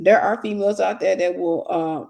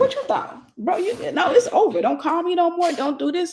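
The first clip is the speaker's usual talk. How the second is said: put-on tough gangster attitude, higher; 9 semitones higher than usual. Retelling breaking up with an ex on the phone: imitating own tough gangster attitude. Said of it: "I turned it to a G again".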